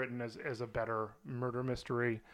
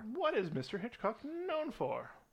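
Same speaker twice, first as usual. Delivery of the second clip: high, slow, put-on British accent. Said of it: "I can do a British accent".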